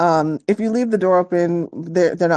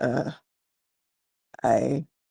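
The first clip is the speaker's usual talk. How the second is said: very pained, hurting, creaky, halting voice; 4 semitones lower, 7 dB quieter than usual. Voicing an injured man as he wakes: pained tone. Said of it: "in a very pained tone".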